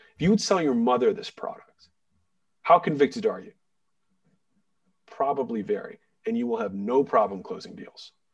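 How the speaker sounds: low, serious tone. Coaching on closing deals, the speaker drops into a lower tone. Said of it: "notice that I have a lower tone right now".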